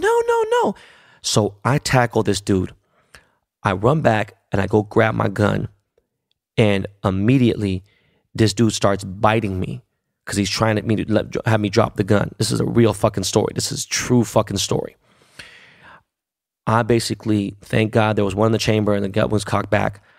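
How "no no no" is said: very high, frantic mock scream. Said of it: "she's, like, screaming".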